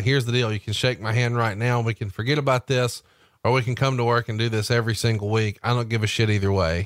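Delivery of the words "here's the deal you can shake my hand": ordinary delivery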